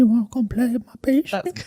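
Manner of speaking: put-on creepy old-man half-whisper, very high. Doing the grandpa who calls to Chris, in a creepy grandpa half-whisper impression. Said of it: "hearing you whisper in my ear".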